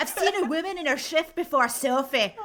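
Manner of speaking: put-on high-pitched Welsh accent.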